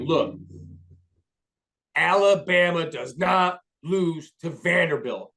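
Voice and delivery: put-on deep, drawling Southern accent. Retelling a man criticizing alabama's head coach, in a deep southern drawl. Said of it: "like deep southern drawl".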